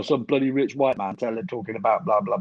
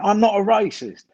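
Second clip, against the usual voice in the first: put-on very high, male London Estuary accent; 10 semitones higher than usual. Imitating a bloke at a statue demonstration: London Estuary accent. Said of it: "that was a bloke going".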